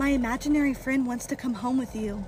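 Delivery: plain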